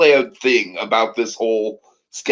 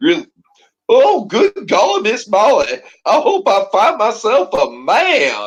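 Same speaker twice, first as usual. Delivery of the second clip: put-on very high, swooping-pitch old grandma voice; 11 semitones higher, 4 dB louder than usual. Speaker retelling a woman's comedy bit, old single grandma voice. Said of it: "She's doing like the old kind of like the kind of the old single grandma voice".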